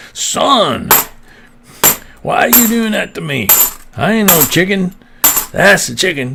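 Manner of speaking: high, laid-on cartoon rooster voice, Kentucky Southern accent. Recalling a cartoon where Foghorn blamed the dog: Foghorn impression, Kentucky Southern accent. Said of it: "he had like a Kentucky Southern accent".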